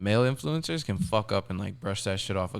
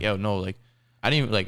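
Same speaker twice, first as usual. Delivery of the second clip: ordinary delivery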